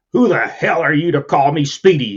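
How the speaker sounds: gruff, growling, bristling delivery. A man objects to a coworker using his nickname: growled. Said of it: "he growled".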